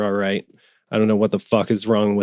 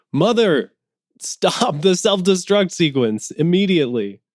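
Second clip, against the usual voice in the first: screaming at high pitch; 9 semitones higher than usual. Narrating a scene, a character screaming at the computer. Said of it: "Davis just screams at the computer".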